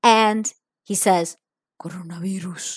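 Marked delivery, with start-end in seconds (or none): 1.8-2.8 eerie, spooky put-on scary voice. Retelling how an unmasked man leaned close and said one word, imitating a scary voice. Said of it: "Like kind of with this voice".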